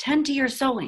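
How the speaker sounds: half-whisper with pitch slightly lifted. Narrator reads Mama's reminder to Nora to tend her sewing, soft half-whisper. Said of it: "a soft voice whispers behind me".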